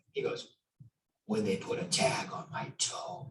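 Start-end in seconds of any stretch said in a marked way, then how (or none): 1.2-3.3 slow, eerie, creepy hushed whisper. Retelling how a man answered a question, imitating a man's creepy voice. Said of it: "with this creepy voice".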